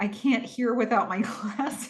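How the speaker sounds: very quiet, hushed, barely audible murmur. Retelling what someone said amid the mayhem, imitating very quiet speech. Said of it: "Lev says very quietly".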